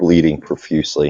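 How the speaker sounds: ordinary talk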